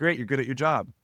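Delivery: acted level deadpan monotone with no excitement. Retelling a guy's reply to news of three closed deals: retelling a deadpan reply. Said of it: "Deadpan goes".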